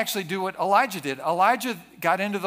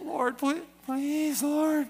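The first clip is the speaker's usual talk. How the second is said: whining, whiny-toned voice; 7 semitones higher, 4 dB quieter than usual. Showing how they pray to the lord, whiny voice. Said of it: "prayer is more effective in the whiny voice".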